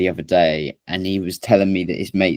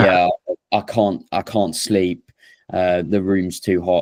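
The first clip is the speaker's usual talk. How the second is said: normal talking voice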